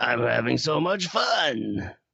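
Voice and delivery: put-on villain voice. Retelling a movie scene as the snowman: Jack Frost impression. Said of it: "That's a great impression".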